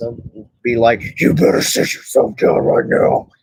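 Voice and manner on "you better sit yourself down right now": rasping, rough, creaky put-on demon voice. Saying how they'd handle kids if left babysitting: demonic voice. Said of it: "he was doing a demonic voice".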